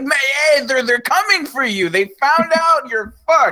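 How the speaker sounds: very high, frantic yelled scream. Retelling a movie scene where a trash man warns someone: imitating a character screaming. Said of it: "he's just screaming this in the street".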